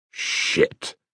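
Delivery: muttered. A man reacts to hearing about the Messenger, muttering. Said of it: "muttered Sable".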